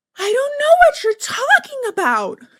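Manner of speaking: sugary, sweet, put-on Southern lady drawl, pitched high. Retelling what a woman said when confronted about her child, imitating a southern woman. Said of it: "She's like".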